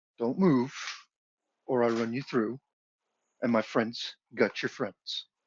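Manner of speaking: very deep, low orc voice. A game master voices an orc behind the player's character: very deep orc voice. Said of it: "you hear a very deep voice go".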